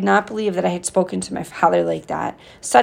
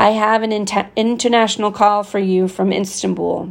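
ordinary delivery

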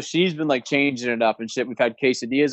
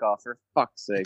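low, pissed-off, exasperated voice at its limit; 4 semitones lower, 4 dB quieter than usual. Describing a dad offered help by his grown son, imitating the pissed-off dad. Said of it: "He'd be so pissed".

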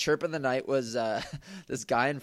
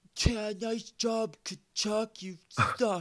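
imitated loud jeer, higher; 10 semitones higher than usual. Retelling an annoyed fan's taunt after a near goal: imitating a loud taunt. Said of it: "he's just said it so loud".

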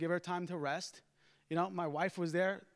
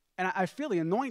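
ordinary talk

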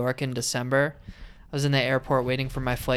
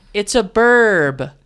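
mock overexcited woman voice, higher and louder; 8 semitones higher, 11 dB louder than usual. Retelling what a woman in the airport said on seeing a pigeon: imitating an overexcited woman. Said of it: "she was too excited".

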